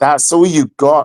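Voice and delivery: put-on scornful, contemptuous tone. Imitating a new wife who suddenly turns nasty after the wedding night: imitating a contemptuous wife.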